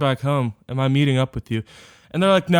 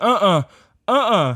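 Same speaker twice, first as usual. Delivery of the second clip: acted moan; 5 semitones higher than usual. Retelling what a passenger in the car did: imitating someone moaning. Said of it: "she just starts moaning, and she's like".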